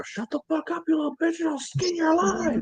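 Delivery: play-acted, very high, shrill, full-on yell. Complaining about noisy kids outside, imagining yelling at them from the window; pretend yelling. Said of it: "I want to open my window and yell".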